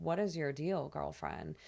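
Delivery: normal talking voice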